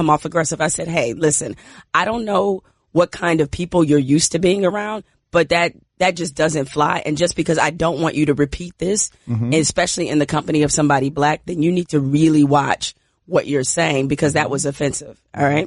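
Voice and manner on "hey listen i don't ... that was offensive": usual speaking voice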